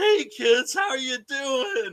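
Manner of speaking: very high-pitched, slow cartoon voice. Retelling how an actor greeted kids as Shaggy: Shaggy voice. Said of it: "turns into Shaggy".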